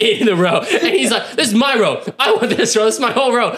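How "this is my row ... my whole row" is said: mock mad, angry, stubborn, insistent tone. Retelling an angry passenger claiming the row: imitating an angry man. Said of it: "he's getting so mad".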